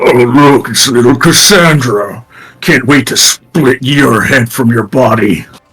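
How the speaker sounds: axe-wielding ogre character voice. Voicing an ogre with a great axe who greets Cassandra: ogre voice. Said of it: "you see the ogre kind of wielding the".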